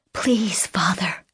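said in a whisper. A daughter answers her father, who wants her to stay: whispered. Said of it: "she whispered".

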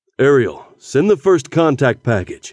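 ordinary delivery

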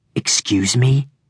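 dangerous, slippery, deadly voice, hardly audible. A narrator reads Hayden's reply to Russell's taunt in a slippery, deadly voice. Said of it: "Hayden's voice was slippery and deadly".

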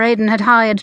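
ordinary delivery, nothing marked

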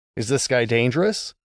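ordinary delivery

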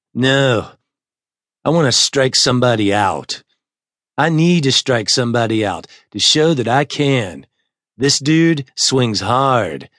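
plain

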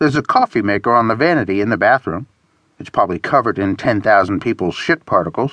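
ordinary delivery

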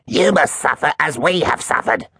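very high-pitched, hissed words. Reading a story, one of a group seeking revenge hisses at their foe. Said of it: "hissed Cruel Duster".

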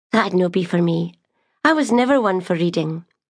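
ordinary delivery

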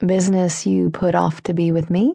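plain

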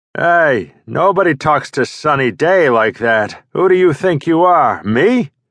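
put-on heavy gravelly Brooklyn accent. The aging comic answers the narrator on the phone, Sonny Day's gravelly Brooklynese. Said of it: "His first client is Sonny Day, an aging comic who was the king of slapstick three decades ago. ... Somebody was speaking in this gravelly Brooklynese".

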